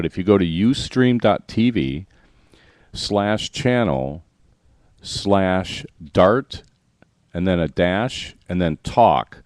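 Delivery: really slow, spelled-out delivery. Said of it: "I'll say this really slow".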